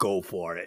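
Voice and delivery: low-pitched put-on impression voice. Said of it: "and Rocky says".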